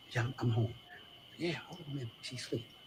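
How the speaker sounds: whispering voice. Answering a caller on the phone because she's asleep: whispering. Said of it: "why are you whispering?".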